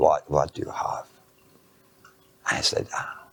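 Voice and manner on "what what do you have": imitated German accent. Retelling what a man said when the speaker brought him something: german accent. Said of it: "He's got a German accent".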